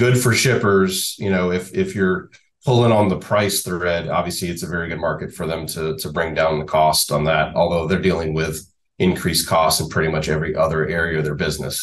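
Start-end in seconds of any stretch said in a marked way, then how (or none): 0.0-1.2 laughing, pitched-up words said through a chuckle.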